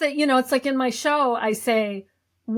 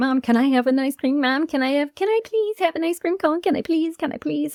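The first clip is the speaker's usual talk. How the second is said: put-on child voice begging repeatedly, over and over; 4 semitones higher than usual. Retelling asking mom at the mall for ice cream: imitating a begging child. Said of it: "I would always be like".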